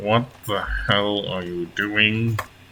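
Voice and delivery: words forced out through clenched, gritted teeth. A storyteller voices a lady challenging a man helping a stranger, through gritted teeth. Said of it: "sort of through gritted teeth".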